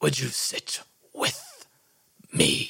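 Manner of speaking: hushed, husky whisper. Voicing a character greeting a player at a table: husky whisper. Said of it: "And in a husky whisper".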